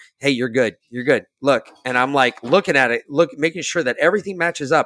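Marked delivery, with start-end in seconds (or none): 0.2-1.7 put-on whisper. Retelling what the lady behind them kept saying: imitating someone whispering. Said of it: "she keeps whispering in my ear".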